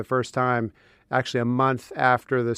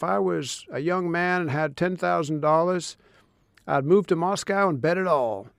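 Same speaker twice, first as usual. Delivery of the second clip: put-on heavy Texan accent, laid on thick, higher pitch; 5 semitones higher than usual. Quoting a former ambassador's advice from long ago, Texan accent impression of Bob Strauss. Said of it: "An Oklahoman doing an impression of a Texan".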